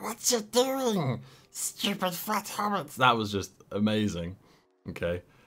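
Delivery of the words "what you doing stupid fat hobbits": very high creaturely voice. Retelling a scene where Sam and Frodo are cooking: Gollum voice. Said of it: "he comes over and he's like".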